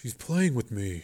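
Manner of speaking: hushed half-whisper under the breath. Joe, thinking of vengeful spirits, speaks half-whispering. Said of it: "Joe whispered".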